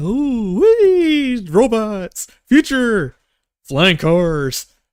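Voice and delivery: awestruck, high, swooping, drawn-out oohing and ahhing. Describing the players gawking at robots as they walk by: acting amazed. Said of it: "your oohs and ahs, you're like".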